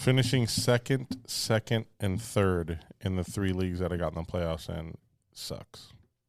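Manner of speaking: ordinary talk, nothing marked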